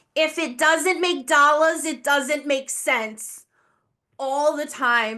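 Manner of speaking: put-on harsh, grating New Jersey accent. Recalling a former manager's constant saying: grating new jersey accent. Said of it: "in the most grating New Jersey accent".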